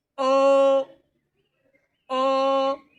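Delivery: O held high and level, first tone. Speaker demonstrating how to read a vowel in each tone, first tone, high level pitch. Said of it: "When you're reading O".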